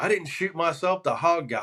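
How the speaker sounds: acted, mild, insistent half-yelled protest. Retelling what a man shot in the leg yelled at him: retelling a yell. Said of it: "he's yelling at me".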